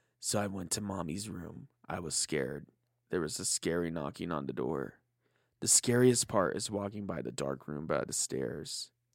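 very low, hushed, spooky, creepy storytelling voice. Telling a scary story about walking to mommy's room at night, put-on creepy voice. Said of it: "I'm going to use my creepy voice".

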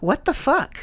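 put-on tiny, very high child's voice. A father imitating his young daughter, in her perfect little voice. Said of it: "with her perfect little voice goes".

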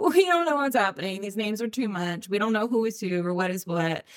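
usual speaking voice

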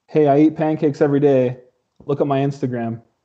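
normal talking voice

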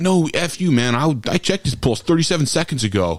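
mock snapping, sharp tone. Acting out an ICU nurse answering back, retelling a snapped comeback. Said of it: "They would instantly bite back at you and say".

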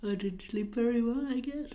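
speaking through a yawn. Telling the other person why they're tired today, yawning while talking. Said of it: "I can see you're yawning right in my face".

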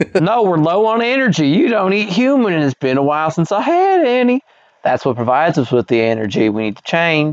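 put-on, old-fashioned Southern accent. Reading a story aloud, voicing a character in antebellum Southern front-porch voice. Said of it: "Sarah walked forward and started to stroke my chin. She looked like she was going to come in for a kiss, but instead she punched me in the face. ... it just sounds like somebody that sits on a front porch of, like, you know, an antebellum South".

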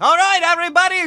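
shouting character voice. Voicing a character waking everyone in the hangar: Takumi yelling. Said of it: "yelling around".

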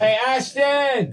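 very high yelling call. Calling down to a wife in another part of the house: yelling to someone downstairs. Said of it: "He's yelling down to his wife".

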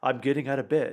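put-on narrating voice. Imitating another speaker narrating his morning: imitating a friend's narrator voice. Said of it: "I sound like this guy".

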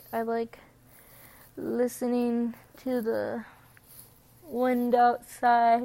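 speaking mid-yawn. Talking through your unedited episode, yawning. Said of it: "Sorry, I yawned".

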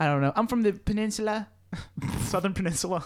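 fake put-on British accent. Asked which part of England, British [name] answers in a put-on British accent. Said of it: "What part of England are you channeling?".

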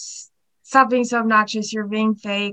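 ordinary talk

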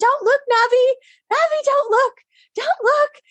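panicked yelling.

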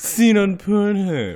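high, put-on, snooty, monocle-wearing upper-crust posh voice. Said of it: "Take off your monocle, [name]".

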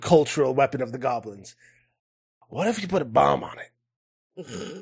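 put-on goblin character voice. Voicing a goblin seller pitching an idea to the players, goblin voice. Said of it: "is a goblin".

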